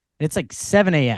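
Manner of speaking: normal talking voice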